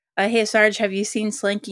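normal talking voice

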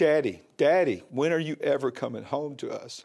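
usual speaking voice

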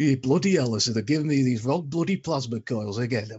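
put-on, mock Yorkshire accent. Retelling how someone did an audition, put-on Yorkshire accent. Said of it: "the only thing he could think of was a Yorkshire accent".

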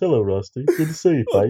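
put-on British accent. A guest shows how he'd pretend to be British to fool Rusty: fake British accent. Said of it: "sort of talk like this".

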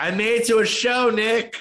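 mock, very high, stretched-out, drawn-out yell. Retelling calling out to a wrestler coming by at a show: imitating a yell. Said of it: "I just kind of yelled".

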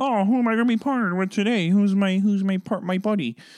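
very high, pushed-up frog puppet voice. Acting out a partner wondering who they'll work with: Kermit voice. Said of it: "I don't know why that was really Kermit-y".

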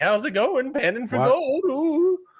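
put-on very high old-timey prospector voice. Playing an old-timey prospector, in an old-timey prospector voice. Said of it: "I'm an old timey prospector".

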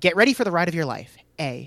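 ordinary delivery

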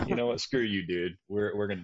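ordinary delivery

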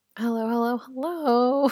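scary, croaking voice with a sore throat. Opening an episode with a sore throat, a host greets listeners in a scary croak. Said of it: "from that scary croak, I have a sore throat".

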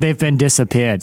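put-on villain accent. Joking in a group conversation, keep going in the Bond villain accent. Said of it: "It was Bond villain".

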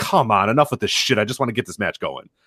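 ordinary talk

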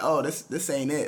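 ordinary talk

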